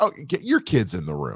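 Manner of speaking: ordinary talk, nothing marked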